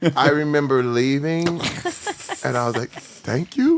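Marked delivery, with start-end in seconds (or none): 2.9-3.8 thank you rising at the end like a question. Recalling leaving an audition, the speaker repeats his thanks, said as a question. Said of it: "I said it as a question".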